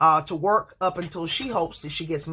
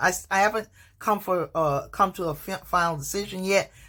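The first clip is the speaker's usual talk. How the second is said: stuttering, tripping over words. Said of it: "And I'm stuttering".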